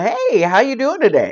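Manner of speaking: swooping, sing-song car salesman voice. Complaining about walking into car dealerships, the speaker imitates a car salesman. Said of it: "The salesman approach".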